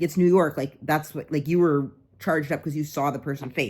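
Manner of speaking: ordinary delivery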